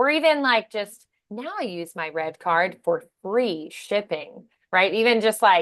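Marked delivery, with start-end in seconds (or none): 3.2-4.5 elongated, drawn-out 'free shipping'. Practicing a Target red card ad read, stretching out 'free shipping'. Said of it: "stretching on just the free shipping".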